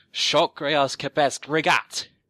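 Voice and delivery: loud, high-pitched shout. Voicing a creature whose horn charges as it casts a spell: shouting a spell. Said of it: "he shouts out".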